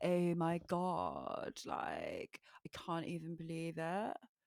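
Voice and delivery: upper-class, posh London accent. Explaining London accents by class, imitating a posh accent. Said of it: "the really posh people speak like that".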